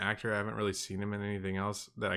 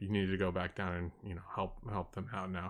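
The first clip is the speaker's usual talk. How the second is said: mock matter-of-fact tone, much quieter; 2 semitones lower, 7 dB quieter than usual. Describing a movie scene, quoting a character's instruction, imitating matter-of-fact delivery. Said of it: "very matter of fact".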